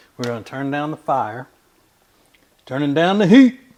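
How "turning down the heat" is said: high-pitched, very loud shouted yell. Turning down the heat while cooking, yelling loudly. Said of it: "I'm sorry if I yelled".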